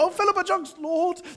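voice breaking, cracking very high on "jugs". Retelling a man's prayer with an awkward word: imitating a voice cracking on "jugs". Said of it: "a crack in his voice as he said the word jugs".

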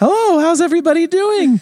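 very high, lifted, sweet voice. Greeting everyone at home, as he is told he must: high voice. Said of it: "I have to talk in a high voice".

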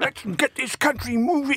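high-pitched, laughing impression voice. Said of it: "that's my Boris impression".

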